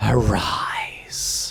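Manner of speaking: eerie, jarring, discordant, deathly voice. Narrating a scene, a character speaks one word in a discordant, deathly voice. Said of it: "in that sort of discordant, deathly voice".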